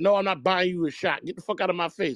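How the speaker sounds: imitated rude, dismissive brush-off tone. Retelling brushing off a stripper at the club: imitating own rude brush-off. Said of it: "with the worst attitude".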